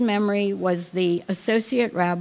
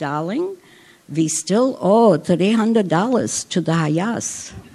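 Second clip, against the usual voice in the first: put-on Hungarian accent, much slower; 4 dB louder than usual. Quoting a late mother's reply to her child's question, hungarian accent. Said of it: "She said in her Hungarian accent".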